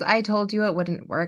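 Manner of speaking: usual speaking voice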